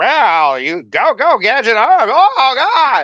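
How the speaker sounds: very high, very loud, very slow swooping cartoon cry. Retelling how the cartoon detective acted: Inspector Gadget voice. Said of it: "Inspector Gadget was just like".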